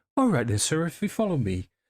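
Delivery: unruffled, high, sing-song housemaid voice. Voicing the maid leading the guests on: maid's voice. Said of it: "she doesn't bat an eyelid".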